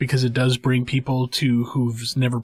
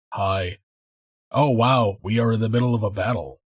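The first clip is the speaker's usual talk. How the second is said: deadpan, lifeless, completely flat monotone; 3 semitones lower than usual. Demonstrating terrible voice acting for some characters, with a completely flat delivery. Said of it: "have like a complete flat delivery".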